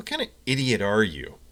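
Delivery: dry, mocking, sarcastic delivery. Retelling what the opponent said when he took the Schwimmwagen: imitating Danny Stanhagen's sarcasm. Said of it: "his ever-present sarcasm".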